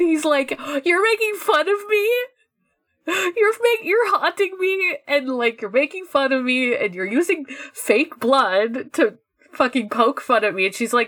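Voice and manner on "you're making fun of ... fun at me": acted-out, frustrated, fed-up venting outburst. Retelling a scene where Kirishiro is frustrated: imitating frustrated Kirishiro. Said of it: "Kirishiro is, like, so frustrated".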